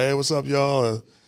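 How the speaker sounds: ordinary talk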